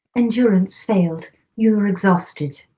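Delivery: lovely, really pretty British accent. Told by the other speaker to try it, speaking in a pretty British accent. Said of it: "you should do like a really pretty British accent".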